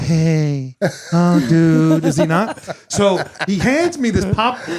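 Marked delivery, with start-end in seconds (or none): 0.0-2.0 casual friendly voice with long drawn-out "hey". Showing how the friend who handed over the popcorn really talks, imitating a friend's voice. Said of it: "He's more".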